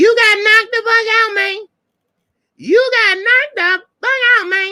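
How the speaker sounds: very high-pitched comic voice, pitched way up. Doing a Chris Tucker impersonation about a knockout: Chris Tucker impersonation. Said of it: "That's my Chris Tucker impersonation".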